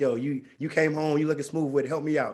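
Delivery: ordinary delivery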